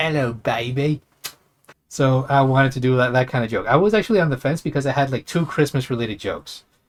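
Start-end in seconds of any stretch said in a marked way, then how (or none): 0.0-1.0 put-on Australian accent, higher pitch. Recreating the doll's line voiced for a Christmas joke: fake Australian accent as Kano. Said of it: "faked an Australian accent for that".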